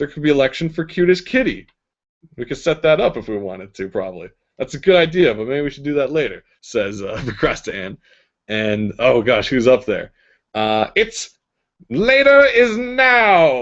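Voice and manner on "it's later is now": evil grating voice, very high and very slow. Storyteller voicing a thing speaking from the ceiling, in an evil irritating voice. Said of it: "says this evil voice, uh, irritating voice from the ceiling".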